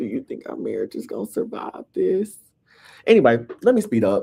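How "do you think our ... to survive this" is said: irritating, raspy, rough, creaky voice. Imitating Wendy asking whether the marriage will survive: imitating Wendy's voice. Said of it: "Wendy pissed me off with that damn voice".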